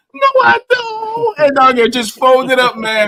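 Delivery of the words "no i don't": very high, piercing, shrill scream. Retelling a story about how Reg reacted; imitating Reg screaming. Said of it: "He just screamed like".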